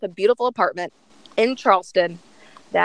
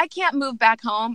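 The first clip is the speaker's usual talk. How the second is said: normal talking voice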